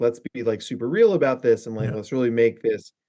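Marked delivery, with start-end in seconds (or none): none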